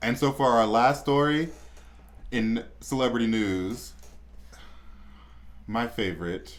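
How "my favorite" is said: low, soft sarcastic aside. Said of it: "I say that sarcastically".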